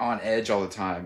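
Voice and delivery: ordinary talk, nothing marked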